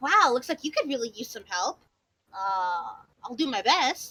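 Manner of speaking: cheerful, casual, breezy character voice. Playing a character who waves and offers help: cheerful, casual in character. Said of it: "he gives a little wave to everyone".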